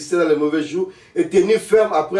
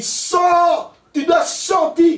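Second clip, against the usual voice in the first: very high, loud shouted voice; 11 semitones higher than usual. Speaker describes how Christians cry out at demons, imitating their shouting. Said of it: "comment les chrétiens crient".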